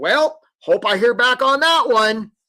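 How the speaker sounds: weird, high, drawn-out cartoon crab accent. A speaker on job applications mimicking hopeful applicants, weird Charlie the Crab accent. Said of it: "you get that weird accent".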